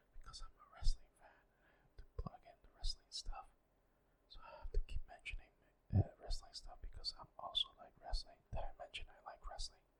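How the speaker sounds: speaking in a whisper. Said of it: "I'll stop whispering now".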